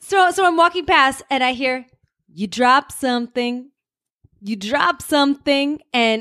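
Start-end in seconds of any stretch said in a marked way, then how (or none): 2.3-5.8 slow, unhurried, drawn-out call, slow and easy. Retelling a street encounter, asked for an impression: Pauly Shore impression. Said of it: "this has to be an impression, too".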